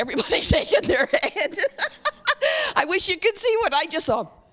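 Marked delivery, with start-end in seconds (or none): 2.7-4.2 fast speech, laughing through the words. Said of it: "Forgive me for laughing".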